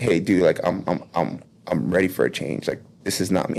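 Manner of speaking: mock pleading, on the verge of tears. Speaker reenacts going up to a man after a meeting, retelling being almost in tears. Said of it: "went up to him like almost crying".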